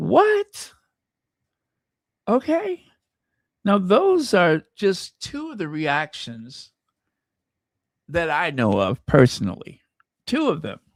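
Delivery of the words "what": shocked disbelief, very high on "what". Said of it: "I'm like".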